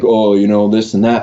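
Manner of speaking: ordinary talk, nothing marked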